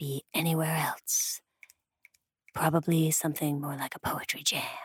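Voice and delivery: soft, hushed, unvoiced storyteller-style whisper.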